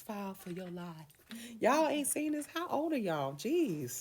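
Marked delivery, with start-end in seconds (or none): 0.1-0.9 theatrical, showy, hammed-up put-on host delivery. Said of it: "in the [name] voice".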